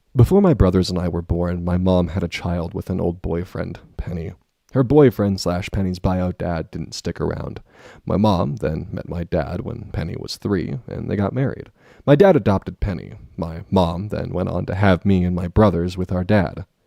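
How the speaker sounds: low ASMR-style storytelling voice. Reading a random passage aloud to test an old voice style, ASMR-style voice. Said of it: "That kind of voice".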